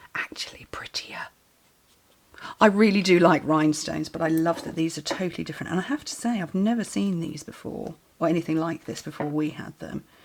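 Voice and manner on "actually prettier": very quiet, hushed whisper. Comparing domed dots with rhinestones while crafting: whispering. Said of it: "I'm gonna whisper this".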